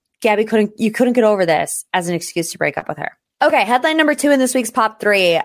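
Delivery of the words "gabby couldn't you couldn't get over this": plain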